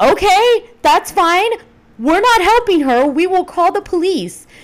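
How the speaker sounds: shrill, frantic, high, loud panicked screaming. Retelling their reply to Justin as he pulls over, retelling panicked screaming. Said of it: "I'm screaming".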